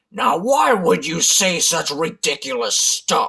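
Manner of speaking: terribly gruff, rough, growling bear voice. Reading a story aloud, a voice answers the boasting rabbit, gruff growling voice. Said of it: "growled a voice that was terribly gruff".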